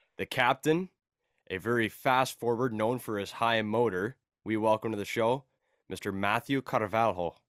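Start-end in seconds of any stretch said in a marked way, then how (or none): 5.9-7.3 put-on, mock Portuguese accent and pronunciation. Introducing the podcast's guest by name: put-on Portuguese accent. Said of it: "I love how he says it with the accent".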